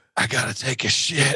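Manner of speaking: put-on whisper. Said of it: "he could only speak it like a whisper".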